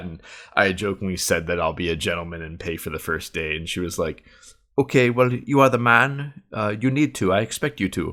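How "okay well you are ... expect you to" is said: put-on Russian accent, pitched up. Retelling what she said about the first date: imitating a Russian accent. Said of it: "the Russian accent was, like, kind of hilarious".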